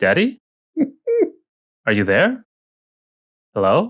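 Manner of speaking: put-on high, sing-song, eerie dead child voice. Explaining how a dragon could talk in the voice of a player's dead child: creepy dead child's voice. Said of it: "talk in the voice of your dead child".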